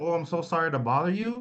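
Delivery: high, meek, timid, over-apologetic tone. Explaining what tone invites people to attack you, demonstrating a timid, over-apologetic tone. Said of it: "If you have a tone like".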